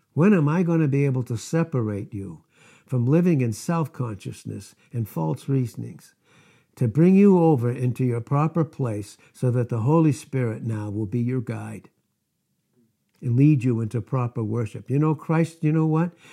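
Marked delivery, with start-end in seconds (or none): 0.2-14.9 play-acted deeply tender, caring, pleading tone. Acting out a quoted speech from scripture, imitating tender tones. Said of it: "he said it in the most tender, tender tones".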